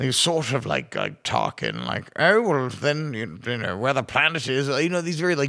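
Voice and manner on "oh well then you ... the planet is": smug, self-satisfied put-on British accent with gravitas. Describing how film officers talk: imitating smug high British accent. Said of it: "these kind of high British accents".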